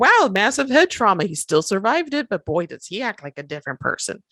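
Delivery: put-on Midwestern Wisconsin accent, slid into. Voicing observers of a famous head-injury case, in a Wisconsin accent. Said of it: "did I go up into a Wisconsin accent for that?".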